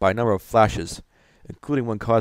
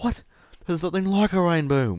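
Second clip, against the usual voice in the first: put-on British accent, high pitched; 8 semitones higher than usual. A streamer imitates a british viewer of the channel reacting, british accent. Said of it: "one guy with a British accent watching my channel saying".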